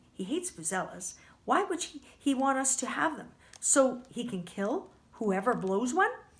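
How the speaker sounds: ordinary delivery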